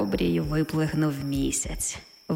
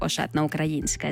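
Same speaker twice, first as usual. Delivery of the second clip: ordinary delivery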